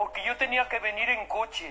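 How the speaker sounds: put-on Andalusian accent.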